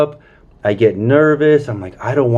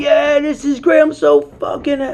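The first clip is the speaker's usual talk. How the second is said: mock, very high, overjoyed, ecstatic scream; 13 semitones higher than usual. Recalling pulling into an overlook with his girlfriend, retelling own excited screaming. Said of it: "I'm screaming like".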